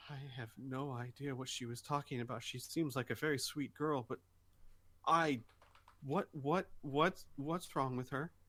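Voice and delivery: very quiet, hushed, private-sounding delivery. Having dragged someone down a hallway by the hand, she speaks: very quiet. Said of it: "she says like very quietly".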